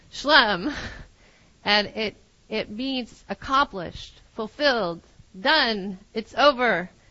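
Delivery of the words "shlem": "shlem" said quick, loud, forceful and powerful. Explaining the Aramaic and Hebrew word meaning complete: fast, powerful shlem. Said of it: "you can say it very fast and really powerfully".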